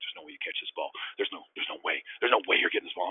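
put-on growling, taunting voice. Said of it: "he was growling at me".

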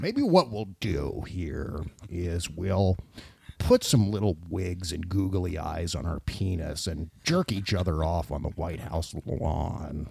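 low, slow, soft, calm voice of authority. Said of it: "Do the voice".

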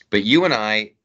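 ordinary talk, nothing marked

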